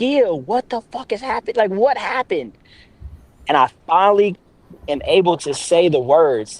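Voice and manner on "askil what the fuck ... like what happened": mock, high-pitched, loud screaming voice. Retelling a family moment, the speaker acts out the mother, imitating mother screaming. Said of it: "my mother's like screaming at this point".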